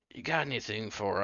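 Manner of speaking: hushed voice. Voicing an old man asking the cleric something privately: whispering. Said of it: "he leans in close and whispers".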